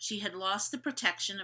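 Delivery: ordinary delivery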